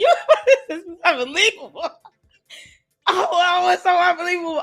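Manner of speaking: high voice, laughing through the words. Reacting to a story about a court, laughing while talking. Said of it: "I'm laughing".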